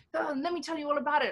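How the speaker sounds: sales pitch delivery. Retelling pitching to investors on a call during a shoot: imitating her own sales pitch.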